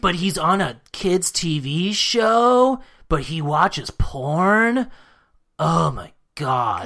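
fake nasal childish adult voice. Retelling what people said about Pee Wee Herman, in Pee Wee Herman voice. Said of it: "in my Pee Wee Herman impression".

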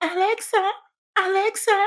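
put-on very high, shrill, repeated yelling. Retelling a spa masseuse who disliked the music; retelling a woman yelling. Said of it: "She starts yelling".

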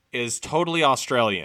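normal talking voice

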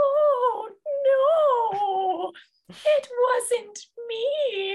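put-on squeaky stop-motion claymation child voice, very high. Retelling a christmas story's naughty kids, in a high-pitched claymation kid voice. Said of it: "the funniest high-pitched claymation-y voices".

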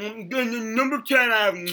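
mock loud, noisy eating sounds. Teasing another speaker about eating on early episodes: imitating someone eating noisily. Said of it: "it sounds awful and disgusting".

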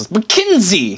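bad New Zealand accent, vowels swallowed. A show host says her own name again in a slipped accent: bad New Zealand accent. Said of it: "I lost all the vowels".

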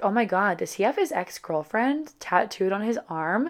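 usual speaking voice

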